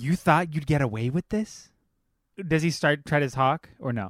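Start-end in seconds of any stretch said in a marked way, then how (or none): 0.0-1.7 aggressive but mysterious delivery. Role-playing a confrontation with another character, in an aggressive but mysterious voice. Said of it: "in a very like aggressive but mysterious voice".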